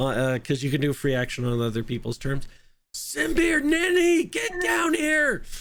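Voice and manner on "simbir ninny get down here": very high, very slow, drawn-out top-of-lungs yell. Calling two characters down from another room in character: yelling at the top of lungs. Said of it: "I'm yelling at the top of my lungs".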